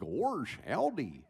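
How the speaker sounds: loud, forward, over-articulated cartoon voice. Showing a newer take on Goofy for echoey arenas: forward, articulated Goofy voice. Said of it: "brought Goofy's voice forward".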